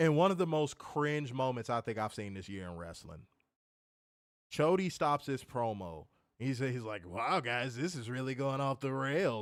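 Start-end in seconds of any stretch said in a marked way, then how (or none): 7.0-9.4 TV football commentator voice. Speaker mimics a wrestler stopping his promo, as a Chris Collinsworth impression. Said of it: "He sounded like fucking Chris Collinsworth".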